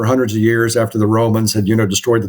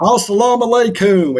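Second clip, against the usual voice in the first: imitated Southern drawl, higher pitch; 11 semitones higher than usual. Imitating a fellow interrogator from South Carolina: Southern accent in Arabic. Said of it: "he couldn't lose that Southern accent".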